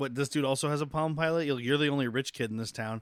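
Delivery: ordinary delivery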